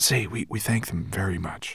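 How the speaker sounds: hushed, half-whispered word. Narrating Ben asking Twigleg to thank the villagers for him, half-whispered. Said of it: "he whispered to Twigleg".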